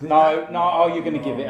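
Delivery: loud, exasperated, frustrated yelling.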